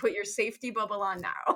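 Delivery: normal talking voice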